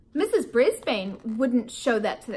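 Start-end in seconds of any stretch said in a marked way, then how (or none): none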